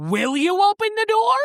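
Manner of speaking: mock exasperated pleading tone, very high-pitched. Retelling a book scene, voicing her asking him to open the door: imitating exasperation. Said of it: "She gets exasperated".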